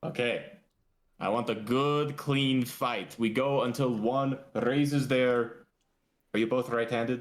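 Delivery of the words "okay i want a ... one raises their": very awkward delivery, higher. Voicing Creed stepping between two fighters: Creed officiating very awkwardly. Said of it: "very awkwardly".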